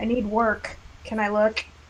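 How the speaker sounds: usual speaking voice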